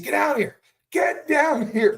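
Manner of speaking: very loud, very high, shrill yell. Retelling opening a box full of gold: retelling own yell. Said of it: "I started yelling the second I opened it".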